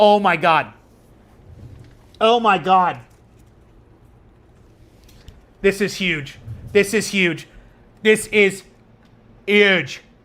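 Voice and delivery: trembling, excited voice. Reacting to a card with a crazy printing error, shaking with excitement. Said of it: "I'm shaking".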